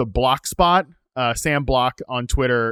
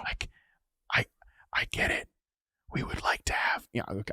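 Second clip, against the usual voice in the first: hushed, barely voiced whispered aside; 3 semitones lower, 11 dB quieter than usual. Saying the quiet part out loud about benched quarterbacks: whispering. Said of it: "I'll stop whispering now".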